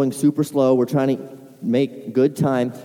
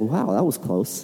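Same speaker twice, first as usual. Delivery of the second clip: cool, calm, as-calm-as-could-be, unbothered delivery; 2 semitones lower, 4 dB quieter than usual. Retelling how the driver reacted after nearly being hit head-on, imitating her calm reaction. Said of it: "She's still just as calm as could be".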